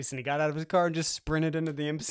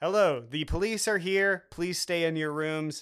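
mock automated recorded phone message voice. Retelling a recorded courtesy call to the room: imitating a recorded courtesy call. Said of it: "we get this recorded courtesy call".

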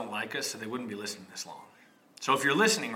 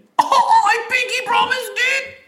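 put-on boy voice, higher and louder; 14 dB louder than usual. Reenacting a boy's side of a recorded phone call: reenacting the boy. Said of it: "that was our really good reenactment".

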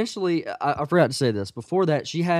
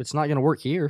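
ordinary talk, nothing marked

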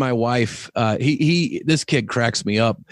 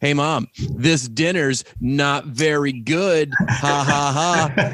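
cheeky, slow, mocking, taunting child's voice; 2 semitones higher than usual. Retelling a son's joking insult about dinner: imitating a kid's taunting insult. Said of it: "he came at my wife with something like".

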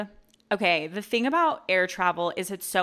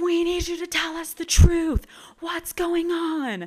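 mock very high, shrill screaming; 9 semitones higher, 4 dB louder than usual. Retelling a man on a stuck plane yelling from the back; retelling a man screaming. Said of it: "this man starts screaming in the back".

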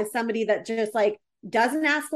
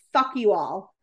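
play-acted, tearful, distraught, overwhelmed but not nasty; 3 semitones lower than usual. Retelling what an upset, crying passenger told the flight attendant: imitating an upset woman. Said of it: "she gets so upset that she tell-".

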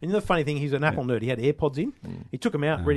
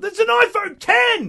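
very high, very loud, top-of-the-lungs shout; 9 dB louder than usual. Recounting a bloke near the Telstra store yelling to his mates: imitating a yell at top voice. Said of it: "at the top of his voice".

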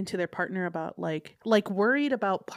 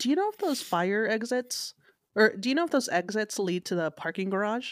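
plain

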